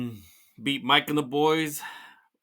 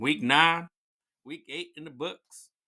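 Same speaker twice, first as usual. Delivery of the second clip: put-on southern accent, drawl; 2 semitones higher than usual. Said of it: "Trying to do my southern accent here".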